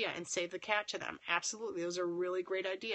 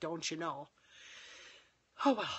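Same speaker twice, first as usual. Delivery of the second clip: Minnesota accent on the phrase; 2 semitones lower than usual. Speaker, tired late at night, shows how they sound: Minnesota accent. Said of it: "you can hear my Minnesota accent".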